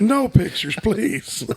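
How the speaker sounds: mock star voice, loud, high and pleading.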